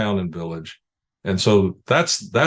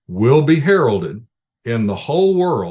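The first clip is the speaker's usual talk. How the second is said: whole hit louder and slow. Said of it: "underline the word whole".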